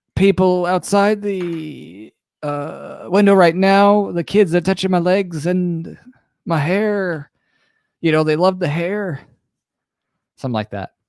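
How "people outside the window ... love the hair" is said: put-on elderly politician voice, higher pitch. Doing an impression drawn from a game card: Biden in a nursing home impression. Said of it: "I'll do my best Biden in a nursing home impression".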